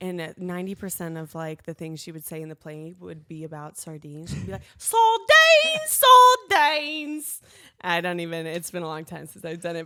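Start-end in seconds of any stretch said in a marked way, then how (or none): 4.8-7.4 put-on very high, very loud, shrill, rich Cockney accent. Recalling her Cockney character's line from a high school play, rich Cockney accent. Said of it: "I had a like rich Cockney accent".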